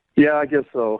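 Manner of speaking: sounding beaten, defeated and reluctant. Asked if he's ready to get her on the phone, a man answers sounding defeated. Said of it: "you sound so defeated".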